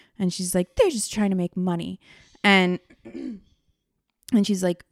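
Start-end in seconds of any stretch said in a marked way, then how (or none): 0.8-2.0 put-on British accent. Speaker mocks a woman dismissing a documentary, in a fake British accent. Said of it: "saying it in like a fake British accent".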